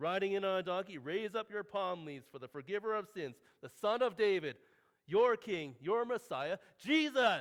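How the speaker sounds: loud, rousing, herald-style proclaiming voice. Imagining a herald presenting Jesus arriving on a donkey, in a herald voice. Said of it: "let me see if I can get my best herald voice here".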